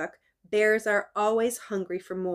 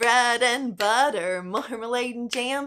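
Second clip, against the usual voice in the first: plain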